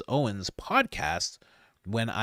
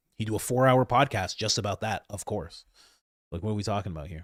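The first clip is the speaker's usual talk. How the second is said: ordinary delivery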